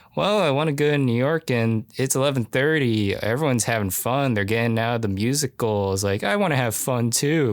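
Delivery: patronizing, dismissive, condescending complaining tone. Retelling a film scene where Susan talks to Kane: imitating Susan's condescending tone. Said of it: "how condescending she is to Kane".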